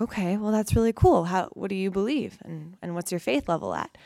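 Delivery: ordinary talk, nothing marked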